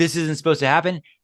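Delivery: put-on emotional, alarmed voice, words rattled off. Speaker acting out a river rafting guide in rough water, imitating an emotional, scared guide. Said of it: "He's getting emotional too".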